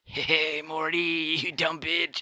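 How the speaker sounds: very slow, low-key scientist voice. Talking about doing voices, the speaker demonstrates a Rick voice. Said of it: "I can't do a quiet Rick".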